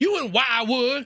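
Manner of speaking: near-yelled, loud, high, impatient bark. Retelling a Wendy's counter clerk's question, retelling a barked question. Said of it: "she almost yelled it, like barked it at me".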